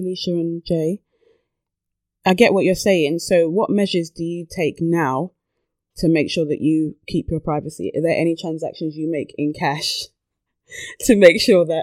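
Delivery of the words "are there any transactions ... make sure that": giggly, breaking up, laughing through the words. Asking a question about cash transactions, laughing while talking. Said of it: "I don't know why I'm laughing".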